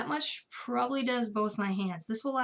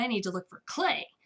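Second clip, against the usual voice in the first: put-on powerful, forceful voice. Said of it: "in his incredibly powerful, awesome voice I can't help to imitate".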